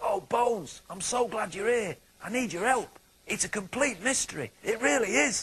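very high, out of breath, panting. Narrator reads Frank, the dog from next door, running up to Bones, panting. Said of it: "He was hanging this from a nail above his kennel door when he heard the front gate opening and saw [name], the dog from next door, / he panted. / Every day, I fetch the newspaper from the garden and t".

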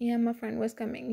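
plain reading voice

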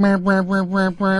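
high-pitched meowing. Faking a requested impression for a caller: Mitt Romney as meowing. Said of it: "what's he sound like?".

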